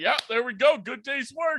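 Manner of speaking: put-on strangely high voice. Telling how a guy moved a recliner and walked away, imitate his oddly higher-pitched voice. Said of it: "oddly kind of higher pitched voice".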